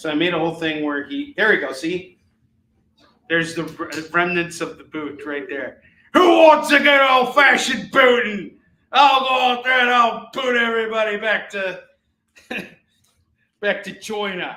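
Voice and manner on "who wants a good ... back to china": put-on very loud, booming, pitched-up Australian accent. Voicing Spawn in a made-up bit about his big boot, Australian accent. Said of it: "an Australian accent?".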